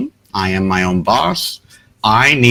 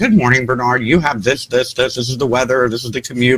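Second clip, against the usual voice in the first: put-on automated virtual assistant readout voice; 3 semitones higher than usual. Describing the morning routine, the speaker imitates the phone: Google assistant voice. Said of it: "that stupid little voice on Android or Google".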